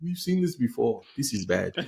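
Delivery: horrible, fake, put-on South African accent. Voicing south africa's reaction, in a horrible south african accent. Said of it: "horrible accent. Horrible accent".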